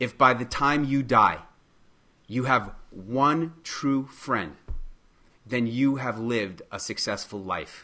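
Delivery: moved, emotional, on the verge of tears. Quoting a teacher's saying from class, the speaker is tearing up. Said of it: "I'm tearing up right now just saying it".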